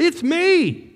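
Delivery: mock very high screamed cry. Retelling Jesus calling out to the terrified disciples: imitating Jesus screaming. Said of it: "I'm guessing he was screaming that out".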